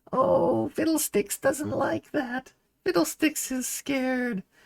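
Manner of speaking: very high, cute, tiny little character voice. Showing ways to do character voices, a speaker does a cutesy Fiddlesticks voice. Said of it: "do a little cutesy character like".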